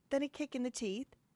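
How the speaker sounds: attempted British accent. Trying out a British accent: attempted British accent. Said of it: "I gotta work on my British accent".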